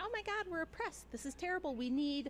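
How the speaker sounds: high-pitched voice of women. Discussing women's suffrage, the speaker does an impression of suffrage-era women. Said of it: "This is a good impression of the women".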